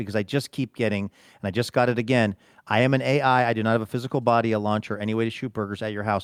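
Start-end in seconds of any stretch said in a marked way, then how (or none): none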